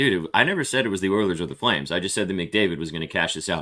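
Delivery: ordinary talk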